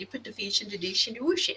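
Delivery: put-on accented pronunciation turning "wash" into "whoosh". Retelling a family saying in the mother's way: imitating mom's accent. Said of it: "she says whoosh".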